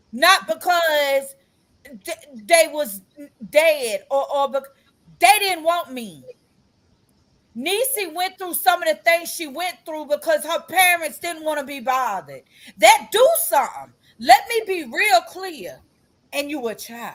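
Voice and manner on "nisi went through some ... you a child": fired-up, insistent, preaching-style heated rant. Speaker talking about children whose parents did not want them, yelling. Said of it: "And I know I'm yelling".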